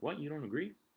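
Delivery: upset, emotional tone. Retelling how a woman reacted to his view: imitating an upset reaction. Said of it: "she got kinda, like, emotional".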